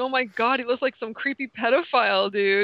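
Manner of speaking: half-frightened, alarmed, spooked outburst. Retelling a first reaction to seeing a mugshot, imitating own scared reaction. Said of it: "being almost scared".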